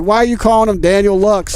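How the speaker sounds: normal talking voice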